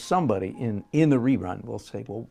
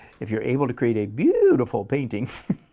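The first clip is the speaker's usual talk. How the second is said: loud, swooping, mocking sarcastic tone; 5 dB louder than usual. Stating an idea he can't say with a straight face: sarcastic tone. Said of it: "I'm going to say it with this sarcastic tone".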